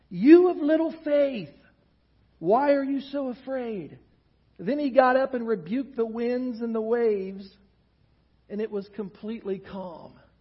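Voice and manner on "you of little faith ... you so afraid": annoyed, fed-up, irritated scolding tone. Quoting Jesus answering the disciples: imitating irritated Jesus. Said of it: "he sounds kind of irritated".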